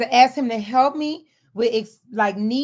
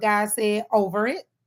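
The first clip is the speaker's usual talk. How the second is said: normal talking voice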